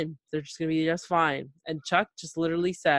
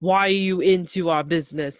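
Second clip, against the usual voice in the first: put-on defensive outburst, louder; 4 dB louder than usual. Retelling a scene where Andre gets defensive: imitating Andre getting defensive. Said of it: "all of a sudden gets so defensive".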